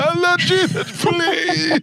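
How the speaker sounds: mock, very high, desperate, begging tone. Retelling being locked up and praying to Jesus: imitating a desperate prayer. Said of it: "I had to pray then".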